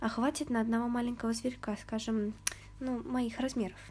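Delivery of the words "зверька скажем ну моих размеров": ordinary delivery, nothing marked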